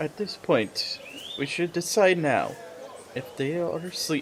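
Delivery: hushed, breathy, whispered aside. A tabletop game player planning with the party, whispering. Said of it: "I'm like whispering this".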